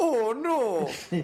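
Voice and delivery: put-on high yelp in a hardcore Canadian accent. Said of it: "I was walking around going".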